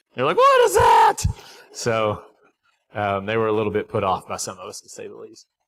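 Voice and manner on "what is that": shrill, very high, loud shrieking scream. Retelling how young girls reacted on seeing the visitors: imitating kids screaming. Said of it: "they started screaming".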